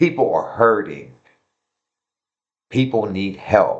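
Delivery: emotional, choked voice. Speaking about people who are hurting and need help: getting emotional. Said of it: "I'm getting a little emotional".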